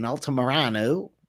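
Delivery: American pronunciation. Saying a fighter's name while making fight picks: american pronunciation. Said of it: "I'll say it like an American".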